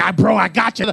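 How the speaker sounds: fired-up, eager, excited tone. Retelling what a friend said during a fight: imitating an excited friend. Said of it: "he's all excited".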